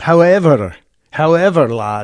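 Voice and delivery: put-on Scottish accent, laid on thick. Mocking an American's affected accent, the speaker imitates Johnny Depp in a mock Scottish accent. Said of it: "trying to affect a Scottish accent".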